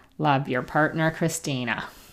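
ordinary delivery

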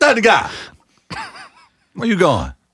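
swooping, playful sing-song call. Showing how you would call this out to a cousin: yelling at a cousin. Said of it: "something you would yell at a cousin".

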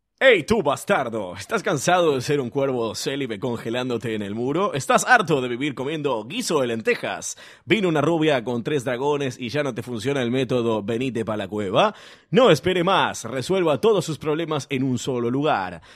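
advertising announcer voice, commercial voiceover delivery. Reading a corrected ad text aloud, in an advertising announcer voice. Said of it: "leer con voz de locutor publicitario".

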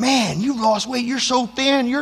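loud yell. Retelling how a quarterback coach greeted them: imitating someone yelling. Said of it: "he starts yelling".

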